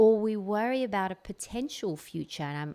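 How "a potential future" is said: potential said with stress. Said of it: "I'm really emphasizing this word potential".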